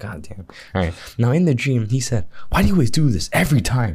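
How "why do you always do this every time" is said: irritated, fed-up, pissed-off, pitched-up voice. Speaker retells what a man said to them in a dream, imitating a pissed-off tone. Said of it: "with a pissed off tone".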